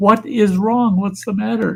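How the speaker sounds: frantic, panicked, loud yelling. Retelling a mother yelling at her hurt kid, imitating a mother yelling. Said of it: "she kept yelling at him".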